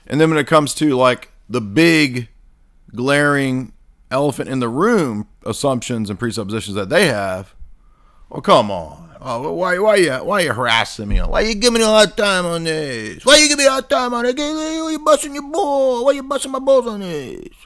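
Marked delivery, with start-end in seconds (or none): 9.2-17.5 very high, sing-song, swooping wiseguy voice. Mocking people who won't justify their own assumptions, with a Tony Soprano impression. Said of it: "Suddenly they go Tony Soprano".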